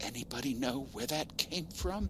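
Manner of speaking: nervous, hushed, high-pitched half-whisper. Standing dead still in the dark with his sister, the narrator asks in a half-whisper. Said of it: "I asked in a whisper".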